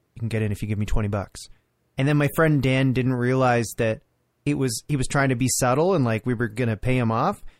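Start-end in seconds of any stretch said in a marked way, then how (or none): 0.2-1.3 quiet aside, lower. Retelling what a bouncer said to their friend, imitating someone speaking quietly. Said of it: "he sort of quietly says".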